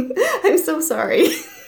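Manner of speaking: high voice, laughing while speaking. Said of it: "I laugh when I'm nervous".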